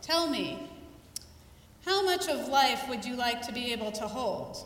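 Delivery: sage, knightly tone, a touch impatient. Retelling a question he asked the speaker mid-exercise, in his best Jedi Knight voice. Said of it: "in his best Jedi Knight voice".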